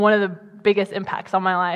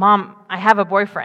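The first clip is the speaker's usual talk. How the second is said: ordinary delivery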